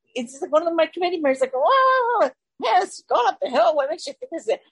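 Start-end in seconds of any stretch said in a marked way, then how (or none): 1.5-4.4 put-on small grumbling voice, drawn-out "wow". Describing the start of an uphill walk, voicing an inner committee member, mock-grumbly little voice. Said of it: "it's just like this little grumbly voice".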